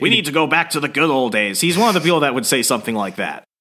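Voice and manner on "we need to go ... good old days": put-on animated sitcom dad voice. Imitating the toxic father from the comic: Lois's father from Family Guy voice. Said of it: "when I think of this dude's voice, I think of the father from Family Guy".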